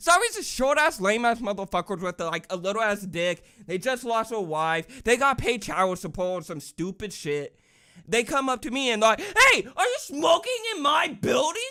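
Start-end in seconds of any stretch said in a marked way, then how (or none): 9.2-11.6 very high, shrill, loud confrontational screaming. Retelling a security guard confronting them about smoking: imitating a security guard screaming. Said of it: "Sorry for the screaming".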